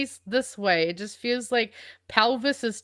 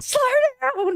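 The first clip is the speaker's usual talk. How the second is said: put-on angry outburst, higher and louder; 5 dB louder than usual. Retelling reacting to cars racing through a green light: imitating own angry outburst. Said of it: "It makes me so mad".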